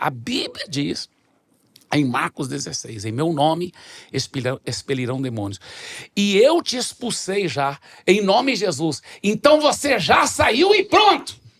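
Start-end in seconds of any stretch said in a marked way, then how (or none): 6.2-11.3 mock commanding mild yell with rising pitch. Retelling commanding a demon to leave: retelling a loud shout. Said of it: "eu gritei bem alto em inglês assim".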